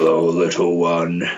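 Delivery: deep, low, slow, gruff drawl. Showing an adapted character voice, in a low, slow, gruff voice. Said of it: "speak slow, low, and in a gruff term".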